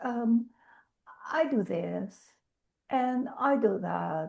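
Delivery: low, soft, glum, acted depressed voice. Retelling how a woman described her business when asked, imitating a sad, depressed voice. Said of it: "You sound so sad about uh, your business".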